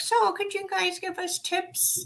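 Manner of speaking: strange, very high, soft, squeaky silly voice. Retelling how they asked the other team for tips, in a strange voice. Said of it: "asking in that strange voice".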